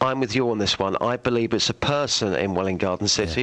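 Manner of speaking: plain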